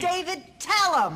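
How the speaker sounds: imitated yell. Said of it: "She's yelling".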